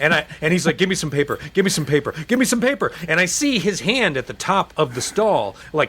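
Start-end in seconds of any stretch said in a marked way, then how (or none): 0.8-2.9 desperate, urgent, frantic, rushed, rising pitch. Retelling a man in a stall begging for toilet paper: imitating a frantic plea. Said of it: "frantically wanting me to hand him toilet paper".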